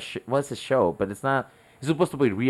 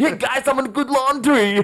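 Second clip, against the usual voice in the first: put-on kid voice, higher and louder; 14 semitones higher, 5 dB louder than usual. Telling friends how he imitates a kid YouTuber to his kids: imitating a kid YouTuber's voice. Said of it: "that's what he sounds like".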